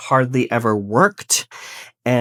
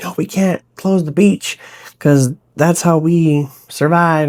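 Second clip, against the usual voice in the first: put-on southern US accent, pitched up; 6 semitones higher, 5 dB louder than usual. Summarizing a book, quoting the beach town's people in a southern accent. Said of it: "I don't know why I go into a southern accent sometimes".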